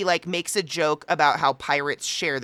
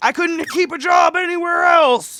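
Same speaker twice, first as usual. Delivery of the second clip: very loud, very high, slow, drawn-out scream; 8 dB louder than usual. Retelling what the sales guy shouted as they walked away: imitating someone screaming. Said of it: "he literally screams at us".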